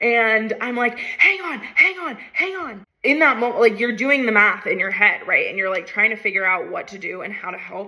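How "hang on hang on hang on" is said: shrill, very high, drawn-out scream. Retelling trying to help someone caught in a current, retelling own screaming. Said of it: "So I'm screaming".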